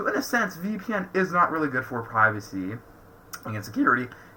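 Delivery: cracked voice breaking mid-line. Explaining what a VPN is and is not for, voice cracking. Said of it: "that was a voice crack and a half".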